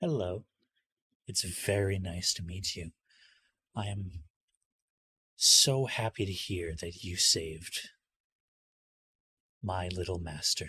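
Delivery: calm, cheerful put-on spirit voice. Voicing Dream, a friend made for Nightmare, greeting the players: calm, cheerful Dream voice. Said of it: "This this is Dream".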